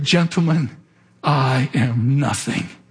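put-on fierce whisper. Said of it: "in a fiercely enunciated whisper".

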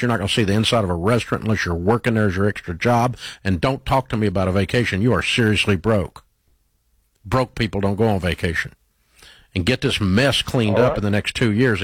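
plain

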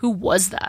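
dark, ominous tone. The narrator's dad asks after the narrator hangs up the phone: asked darkly. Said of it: "my dad asked darkly".

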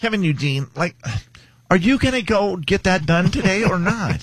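high motherly voice. Answering a request for his mom voice: imitating his mom's voice. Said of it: "What's your mom voice sound like".

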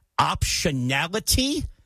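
"optionality" said slowly, drawn out syllable by syllable.

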